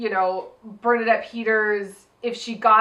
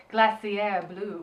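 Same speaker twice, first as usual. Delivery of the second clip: glacier pronounced with a British accent; 5 dB quieter than usual. Suggesting how to pronounce a drag name: British Glacier Blue, Bear Grylls style. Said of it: "Can we can we pronounce it like Bear Grylls?".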